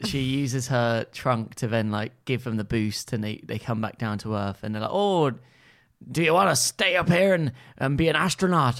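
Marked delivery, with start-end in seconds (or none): 4.9-8.8 put-on Irish accent. Speaker acts out characters in a story being retold, irish accent. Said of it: "what accent is Irish".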